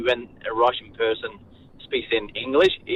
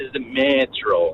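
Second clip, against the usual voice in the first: acted dragged-out words. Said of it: "they drag it out".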